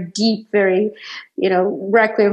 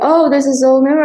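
mock shout, higher pitched; 6 semitones higher, 5 dB louder than usual. Retelling how a girl recognized the speaker, imitating her shouting. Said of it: "she starts shouting".

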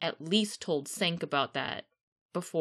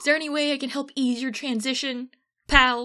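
loud, high-pitched angry tone; 7 semitones higher, 6 dB louder than usual. Showing how words can clash with tone, polite words in an angry tone. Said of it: "You say it with an angry tone".

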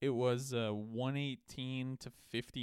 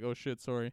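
embarrassed tone, acted out. Retelling walking in on someone in a bathroom: retelling an embarrassed apology.

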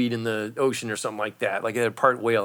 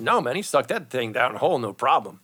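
ordinary delivery

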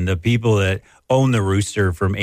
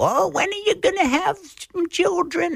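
bad, very high, squeaky, nagging grandparent voice; 4 dB quieter than usual. Describing past pressure to have children: bad grandparent impression. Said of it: "that's a bad impression".

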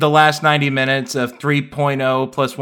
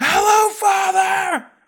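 put-on, booming, projected, carrying voice, pitched very high. Quoting Kaoru greeting his father, in Kaoru's loud projecting voice. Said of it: "has a really loud voice and he projects very well".

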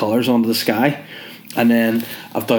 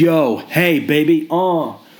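put-on street-tough gangster voice, pitched up; 6 semitones higher than usual. Telling about their mum coming to help, suddenly talking like a gangster. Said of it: "why I'm talking like a gangster".

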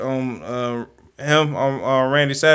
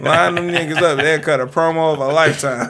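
plain

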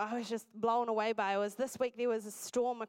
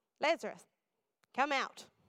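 mild, big-voiced, put-on commanding proclaiming call; 3 semitones higher than usual. Retelling a story, the speaker quotes a man's command in a big loud voice. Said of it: "he speaks in a big loud voice".

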